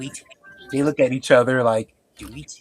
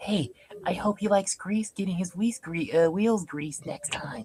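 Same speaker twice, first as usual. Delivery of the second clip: very soft whispered aside; 3 semitones higher, 9 dB quieter than usual. A character whispers an aside to Daryl: whispering. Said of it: "he whispers to Daryl. Whispers".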